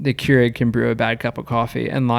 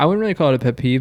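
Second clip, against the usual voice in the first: usual speaking voice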